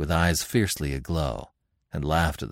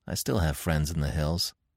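plain reading voice

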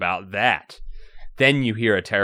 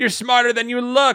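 very high-pitched cackling villain voice; 3 dB louder than usual. Reading a story aloud, the headhunter's voice fills the lab, cackling. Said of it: "he cackles".

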